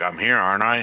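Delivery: heavy, big, loud, stern voice. Answering a question in character: big stern voice. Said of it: "that big stern".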